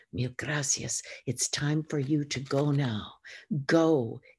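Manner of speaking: in a whisper. A man tells a woman it is time for her to go, whispering. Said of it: "whispering again".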